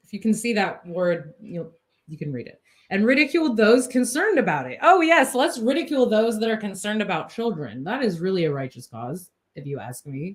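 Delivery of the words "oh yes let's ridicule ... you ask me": extremely heavy sarcasm with swooping pitch. Commenting on a magazine review that ridicules concerned people: extremely sarcastic. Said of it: "I'm being extremely sarcastic".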